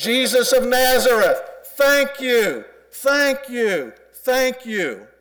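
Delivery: very high, loud, drawn-out holler. Acting out a man hollering to jesus of nazareth, loud hollering. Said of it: "which is a loud voice, and it goes something like this".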